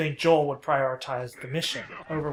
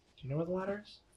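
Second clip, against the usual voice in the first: put-on bright, cheery children's television presenter delivery; 3 semitones higher, 10 dB quieter than usual. Asking other players where the ladder is, like a children's show host. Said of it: "I just said that like a children's show".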